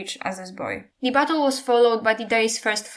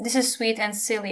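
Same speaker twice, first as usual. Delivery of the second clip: ordinary delivery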